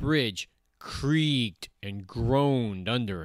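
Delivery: ordinary delivery, nothing marked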